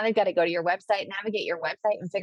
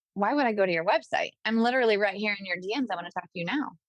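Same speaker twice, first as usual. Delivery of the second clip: plain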